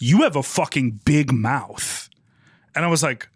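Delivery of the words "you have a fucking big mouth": hostile, aggressive delivery. Retelling a man confronting the speaker at a party: imitating someone speaking aggressively. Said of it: "beelined up to me at a party aggressively and was like".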